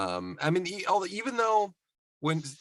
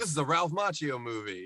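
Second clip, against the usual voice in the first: ordinary talk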